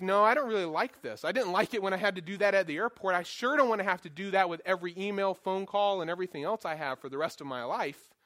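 plain

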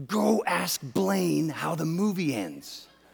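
tender, slow, loving, unhurried half-whisper. Retelling what his wife said during a movie: imitating a loving half-whisper. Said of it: "she lovingly whispers to me".

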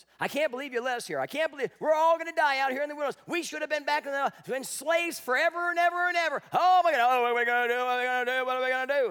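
mock frantic, auctioneer-fast, high, loud panicked screaming. Retelling how they screamed at Moses in the wilderness, imitating panicked screaming. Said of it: "they're screaming at Moses".

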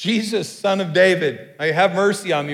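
loud call from far off. Retelling a blind man calling out to Jesus from a distance: imitating a yell for attention. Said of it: "he started yelling".

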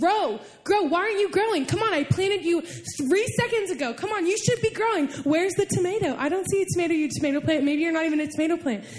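nagging, badgering, scolding tone. Imagining yelling at a tiny seed to grow: pretend yelling at a seed. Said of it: "just yelling at it and saying".

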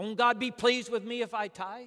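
angry, very loud. Retelling a church member's challenge about tithing: imitating an angry man. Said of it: "he said it in an angry way".

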